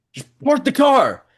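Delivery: frantic, shrill, very high and loud screaming. Retelling a dramatic man screaming in the school parking lot, imitating someone screaming. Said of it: "then he starts screaming".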